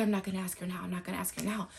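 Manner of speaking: fast, hurried, anxious, nervous half-whisper. Retelling what he kept half-whispering while pulling the speaker downstairs, imitating his half-whisper. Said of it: "And he kept whispering".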